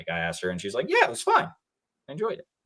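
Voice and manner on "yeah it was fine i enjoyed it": very high, quick, breezy, happy sing-song. Quoting a woman's reply after asking for her review, imitating a happy tone. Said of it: "in a happy tone".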